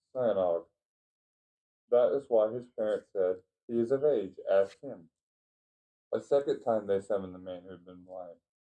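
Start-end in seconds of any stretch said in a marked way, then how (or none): none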